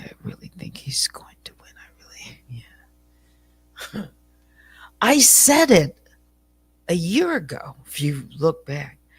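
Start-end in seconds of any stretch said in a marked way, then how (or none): 0.0-2.4 lowered, hushed voice, almost a whisper. Speaker recalling what they used to say before the election, retelling a lowered voice. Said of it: "lower my voice and say".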